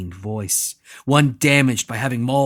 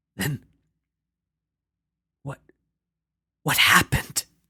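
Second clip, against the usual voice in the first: halting, strained stammer with repeated words. A narrator reads the old man's question to the brute: stammering, halting question. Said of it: "towering over the old man, / towering over the old man, / towering over the old man, / [name] spoke in a wounded, strained voice, / But, but you weren't always, you weren't always like".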